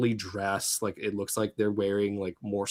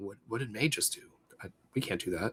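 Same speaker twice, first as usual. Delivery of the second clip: hushed, baffled, puzzled half-whisper; 8 dB quieter than usual. Game narrator voicing a character who half-whispers into a player's ear: Mentor half-whispering. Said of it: "you hear Mentor just whisper to your ear".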